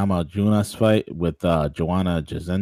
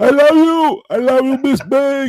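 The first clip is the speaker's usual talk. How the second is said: put-on Cuban accent, pitched up, slower; 9 dB louder than usual. Retelling an old beef, addressing a rival in a Yoel Romero impression. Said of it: "That's my Yoel Romero impersonation".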